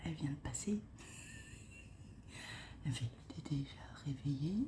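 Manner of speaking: soft unvoiced whisper, very quiet. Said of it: "quand je parle doucement".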